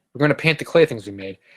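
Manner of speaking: normal talking voice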